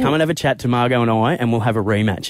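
ordinary talk, nothing marked

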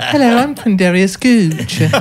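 put-on high British accent. Improvising a character with the group, introduce him in a Quindarius Gooch British voice. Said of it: "he's British".

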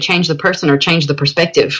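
plain

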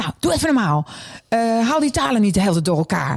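cranky, bitchy scolding tone.

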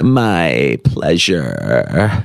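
very low, creaky vocal fry with drawn-out "my". Mocking people who answer thanks with this phrase, the speaker uses vocal fry. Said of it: "My pleasure with the vocal fry".

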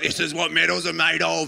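very gritty, rasping, loud, rough cheer. Retelling what a cheering man said, in the grittiest voice. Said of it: "in the grittiest voice you could ever hear".

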